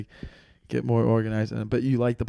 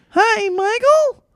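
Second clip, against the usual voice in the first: very high, loud, belted cartoon voice; 8 dB louder than usual. Acting out a voicemail from the mother: Mickey Mouse voice as mom. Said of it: "Mickey Mouse is your mom?".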